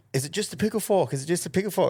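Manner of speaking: mock high-pitched shouted yell. Retelling what a man yelled through the screen, retelling a yell. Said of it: "he's fucking yelling through the screen".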